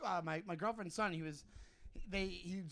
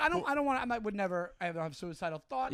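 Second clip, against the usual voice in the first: usual speaking voice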